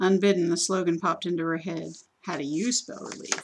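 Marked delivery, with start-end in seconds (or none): 2.2-3.4 mock-serious, playfully solemn, grinning, quieter. Lila speaks to her own reflection in the bathroom, mock-serious with a grin. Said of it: "she said mock seriously to her haggard reflection with a grin".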